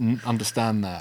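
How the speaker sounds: usual speaking voice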